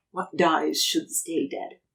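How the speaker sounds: low, eerie, hushed, uncanny ghostly whisper. Narrating the game as the darkness vanishes, the storyteller voices Tavi: Tavi's uncanny whisper. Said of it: "Tavi's uncanny voice whisper".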